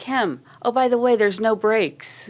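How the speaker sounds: high, called-out, play-acted yell. Retelling what the sister called out halfway down the hill: imitating someone yelling. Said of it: "my sister yells over to Kim".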